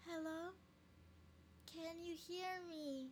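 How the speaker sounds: put-on eerie, very high, slow little girl voice. Retelling what someone heard right by her ear, the speaker uses a little girl voice. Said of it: "I can do the little girl voice".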